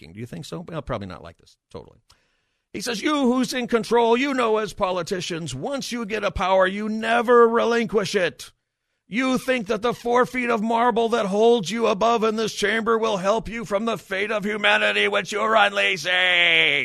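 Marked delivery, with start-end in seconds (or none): 3.0-16.9 very loud, shrill, booming shouting tirade. Quoting a man shouting at county supervisors: imitating a man shouting. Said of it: "He started shouting at the supervisors".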